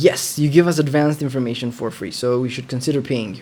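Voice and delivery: ordinary delivery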